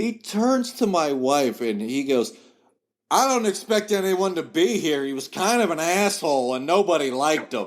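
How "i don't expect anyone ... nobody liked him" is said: mock loud talking, higher. Retelling a remark made at a funeral home: imitating someone talking loudly. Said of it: "that is how loud he said it".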